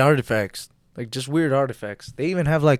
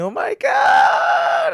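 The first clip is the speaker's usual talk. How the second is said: acted scream, higher; 4 dB louder than usual. Acting out how the other speaker would react on waking: imitating someone screaming. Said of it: "you're gonna be screaming".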